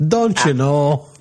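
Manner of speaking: put-on Minnesotan accent. Asked to do someone from minnesota, the speaker answers in a minnesota accent. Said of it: "You guys do someone from Minnesota?".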